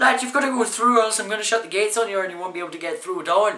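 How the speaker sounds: put-on Irish accent, pitched a little high. Retelling what a man told the speaker's dad, in a put-on irish accent. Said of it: "just say he's Irish".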